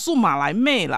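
put-on Mandarin with Taiwanese-accented inflection. Retelling a reply to someone's remark about the wife, in Taiwanese-accented Mandarin. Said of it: "我就用台湾国语就跟他说哦".

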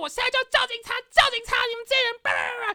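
screeching, shrill yell pitched very high. Retelling a blow-up at noisy people, retelling shouting. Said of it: "我就大叫".

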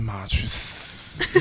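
barely audible whispered mutter under the breath. Retelling what someone said under their breath: imitating a quiet mutter. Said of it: "就是这小小声".

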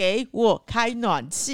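mock very slow, stretched-out, high-pitched shout. Retelling walking into their place in Taoyuan on a cold day, retelling a shout. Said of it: "我就立刻大喊".

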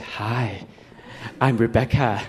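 gentle, soft, low, hushed voice. Retelling meeting Rebecca Romijn on set, quoting her greeting in a soft voice. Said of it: "she turned around with a soft voice".

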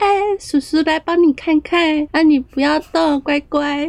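put-on doting, high baby-talk voice. Speaker imitating a male doctor talking to an animal, imitating baby talk. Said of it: "跟动物讲话的时候都会变成娃娃音或高八度".

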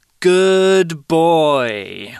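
put-on slow, gentle, with "boy" drawn out. Praising him when he pees on the paper, said slowly. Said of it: "Say it slowly like this".

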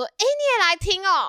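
high, loud shout calling out at distance. Retelling a story where one woman shouts to another, retelling a shout across. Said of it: "女B 就对着女A 大喊说".

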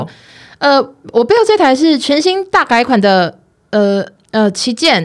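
fumbling, halting, stumbling speech full of ums. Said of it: "我来模仿一下".

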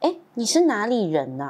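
slow, gentle, mock tender sing-song voice. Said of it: "很温柔的说".

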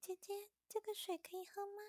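very high, small, tiny little voice. Speaker recounts a small voice heard suddenly: imitating a tiny voice. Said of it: "突然间就一个很小的声音".

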